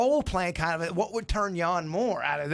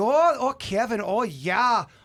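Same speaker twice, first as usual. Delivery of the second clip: put-on sultry, sexy Minnesota accent, higher pitch; 4 semitones higher, 4 dB louder than usual. Asking the others whether they like an accent: sexy Minnesota accent. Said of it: "The, the".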